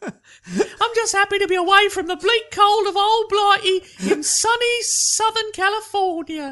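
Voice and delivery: very high-pitched put-on celebrity voice. Showing off an impression for the others, in a Tom Holland voice. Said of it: "my Tom Holland voice".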